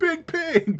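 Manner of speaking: very high, loud alarmed shout. The cow lady stands up to alert the others, Erixis shouting. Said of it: "stands up and just shouts".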